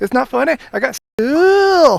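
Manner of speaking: put-on very high, very loud, cute Scottish girl voice. Retelling what a little girl said after waking with marker on her face, cute Scottish accent. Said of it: "such a cute Scottish accent".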